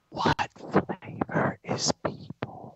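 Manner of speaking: slow ghostly whisper. Narrating a scene where a ghostly voice whispers in your ear, ghostly whisper. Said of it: "that like whispers in your ear".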